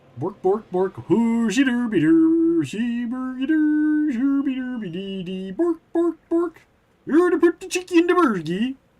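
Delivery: very high, singsong babbled gibberish. Chatting about Muppets, the speaker breaks into a Swedish Chef impersonation. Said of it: "That's my that's my Swedish chef impersonation".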